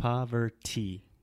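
"poverty" drawn out very slowly and carefully. Showing a learner how to pronounce the word: said very slowly. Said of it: "Just say it very slow".

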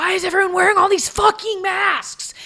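very high, shrill, freaked-out screaming. Retelling a customer's outburst about masks: imitating a customer screaming. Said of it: "screaming at us about".

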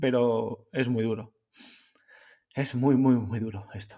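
choked-up, emotional voice catching. Talking to listeners about cancer taking someone, choking up. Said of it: "Me estoy emocionando".

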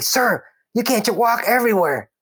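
very high, worried, alarmed yelling. Retelling how a protective corporal warned him off the path: imitating someone yelling. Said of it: "yelling at me".

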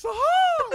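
all-out scream, very loud and high. Retelling a coworker's prank call: imitating someone yelling loudly. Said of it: "he would do it super loud".

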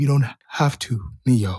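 very low, slow dramatic delivery with long pause. Friends joking about a movie, one does a Morpheus voice with deep pauses. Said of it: "Deep pauses".

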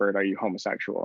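low, hushed whisper. Retelling how someone asked a question face to face, imitating their whisper. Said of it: "and then whispered".

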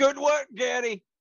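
cheerful loud shouting, high.

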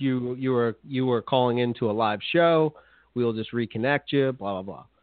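ordinary talk

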